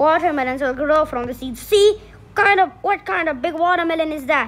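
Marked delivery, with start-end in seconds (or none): none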